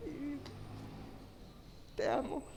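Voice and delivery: voice breaking with emotion. Thanking her husband in front of others, voice breaking with emotion. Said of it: "perdón si se me corta, estoy muy emocionada".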